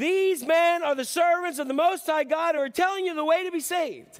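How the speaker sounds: acted, very high, loud proclaiming shout. Retelling how a girl followed Paul: imitating someone shouting. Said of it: "and she's shouting".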